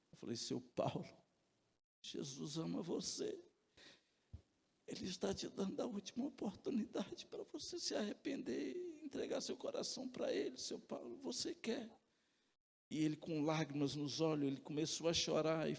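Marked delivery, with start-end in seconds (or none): 0.3-11.8 whispered, soft, feeble, trembling weak voice. A man recalls what he said to another man while both were dying, re-enacting a trembling, weak voice. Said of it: "eu falei com uma voz trêmula e fraca".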